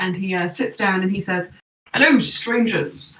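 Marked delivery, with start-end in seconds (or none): 1.9-3.2 imitated gruff voice. Voicing Merlin, disguised in a fake beard, as he sits down: Merlin's gruff disguised voice. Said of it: "the gruff voice of a stranger say".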